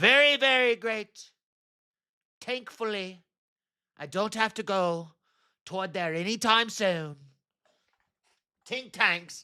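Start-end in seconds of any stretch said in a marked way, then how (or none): 0.0-7.2 put-on politician voice with Irish accent. Performing a requested line as Donald Trump with an Irish accent. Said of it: "Do it as Donald Trump with an Irish accent".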